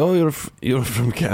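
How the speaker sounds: fake, put-on Russian accent. Retelling what New Zealanders said to a Canadian, in a put-on Russian accent. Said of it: "I'm still doing the Russian accent for some reason".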